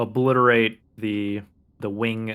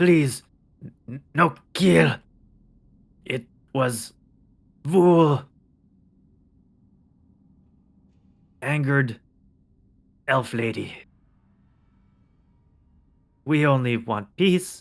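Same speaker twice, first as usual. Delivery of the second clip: simple, broken creature speech; 4 semitones higher than usual. A downed creature on its knees speaks to the party: broken Common speech. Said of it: "he speaks to you in broken common".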